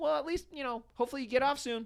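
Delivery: very high, upbeat, trying-hard positive voice. Retelling Jules chatting with a tired store worker: imitating Jules trying to be positive. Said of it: "This is Jules trying to be, like, positive".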